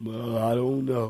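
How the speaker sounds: very low, hushed, gloomy, defeated mumble. Acting out someone grumbling through a trial: gloomy Eeyore voice. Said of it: "grumbling and mumbling and complaining and sound like a spiritual Eeyore".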